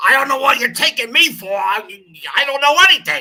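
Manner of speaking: mock loud, gravelly comedian voice. Retelling a game show answer: Gilbert Gottfried impression. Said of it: "he'd go".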